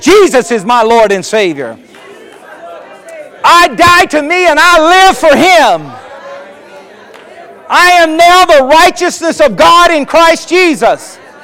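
bold proclaiming voice. Leading the congregation in a spoken declaration of faith: bold declaration voice. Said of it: "get your declaration voice".

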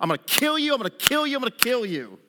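high, swooping, jeering and menacing tone. Retelling Goliath's threats before the battle: imitating Goliath mocking and cursing. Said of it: "He's mocking and cussing and cursing".

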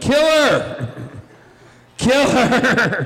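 shrill, very high, drawn-out yell. Running after the dog and the mail lady, retelling a yell. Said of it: "just yelling".

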